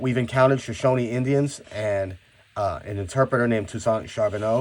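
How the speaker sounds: plain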